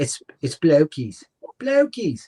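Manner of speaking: put-on British accent on "blow keys". Discussing how to pronounce a word with another speaker; british accent. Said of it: "I say it with like a, a British accent".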